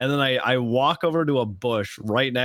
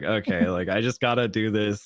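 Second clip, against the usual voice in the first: put-on laughing while talking, lower, slower; 4 semitones lower than usual. Speaker retelling words of the person who gave the punishment, imitating laughing speech. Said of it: "she was like laughing the whole time".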